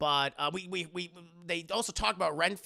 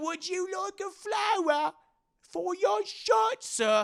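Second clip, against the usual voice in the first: high-pitched put-on Cockney accent; 4 dB louder than usual. Retelling a Dracula movie scene, voicing the flower character in a Cockney accent. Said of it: "Cockney accent flower".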